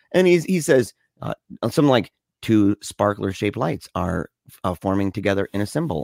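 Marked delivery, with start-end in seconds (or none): 2.4-6.0 robotic narration voice with a human edge. Retelling a movie's audio description narrator: imitating a robotic narrator voice. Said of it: "this robotic, it's a mix of, like, a robot and a natural person".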